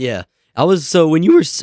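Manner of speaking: voice breaking, cracking up high mid-sentence. Recalling who found him first with the other speaker, voice cracking. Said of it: "oh voice crack".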